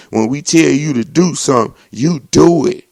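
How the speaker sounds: loud, commanding hollering like a cop. Recounting a man's arrest, imitating the police hollering at him on the ground. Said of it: "the police kept hollering saying".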